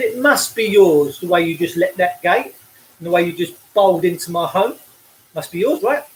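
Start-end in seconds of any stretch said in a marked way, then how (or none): none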